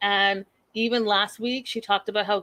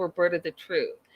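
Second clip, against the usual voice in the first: ordinary talk, nothing marked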